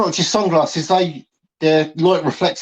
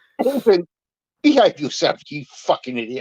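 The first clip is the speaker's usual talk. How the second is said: scolding schoolteacher voice. Telling another lad in the group to behave, scolding like an old schoolteacher. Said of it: "you sound like an old school teacher".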